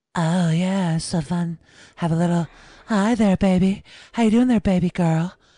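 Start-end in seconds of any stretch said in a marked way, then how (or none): 1.9-5.3 put-on lustful, seductive, flirty voice. Asked to do a lust voice for a group, in a put-on lustful voice. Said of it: "can we hear lust?".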